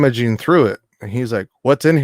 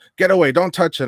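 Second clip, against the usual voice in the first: high-pitched raised voice; 6 semitones higher than usual. Retelling a security guard's reaction: imitating someone raising his voice. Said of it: "raised his voice at me".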